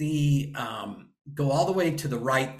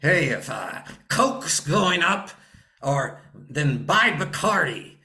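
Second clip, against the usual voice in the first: mimicking talking around a cigar, louder; 3 semitones higher, 4 dB louder than usual. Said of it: "he's chewing on a cigar".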